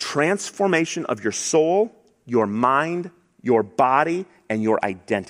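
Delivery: deliberately slow delivery. Explaining what the gospel does, the speaker repeats the list: slow, deliberate. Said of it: "Let me say it slowly".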